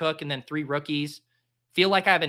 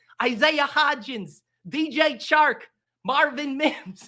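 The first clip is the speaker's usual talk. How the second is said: cartoonish Australian accent, very high, drawn out; 10 semitones higher than usual. Listing off player names, in a put-on Australian accent. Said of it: "I just listed it off in an Australian accent".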